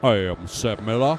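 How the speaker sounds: deep, slow, deliberate, drawn-out put-on voice. Trying again deeper after being told it is not deep enough: deeper Seb Miller impression. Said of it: "Something more like this".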